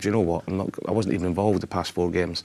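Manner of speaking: ordinary talk, nothing marked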